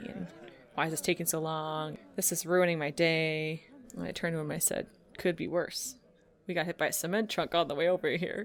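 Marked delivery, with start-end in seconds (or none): 0.0-3.6 put-on rude, nasty, grumbling complainer voice. Retelling a man waiting in the photo line, imitating a nasty complainer. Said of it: "there was a guy there who was being kind of nasty".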